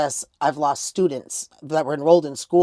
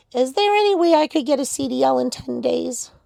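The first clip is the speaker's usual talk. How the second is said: tiny mousy squeak, very high and creaky; 10 semitones higher than usual. Retelling a phone call from a young girl; little mousy voice. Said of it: "with this little mousy voice".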